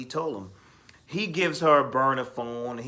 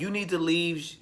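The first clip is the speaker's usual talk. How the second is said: yelling, higher pitched; 4 semitones higher than usual. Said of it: "just yelling and raising his voice".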